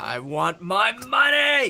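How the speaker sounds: bad yell, very high, shrill, very slow and drawn out. Imitating someone yelling about money: bad impression of someone yelling. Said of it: "That wasn't a good impression".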